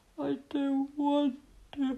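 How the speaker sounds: drowsy, soft, high words yawned out. At bedtime Little Tiger answers Mummy Tiger, yawning, sleepy. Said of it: "yawned Little Tiger".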